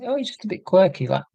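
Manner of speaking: high, mocking, dismissive voice.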